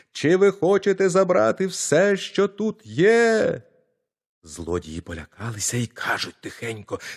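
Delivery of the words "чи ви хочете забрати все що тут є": very high, full-throated yell at the top of the lungs. Narrator reads the tiny boy calling from the priest's storeroom to the thieves, shouting at the top of his lungs. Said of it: "та як закричить на все горло".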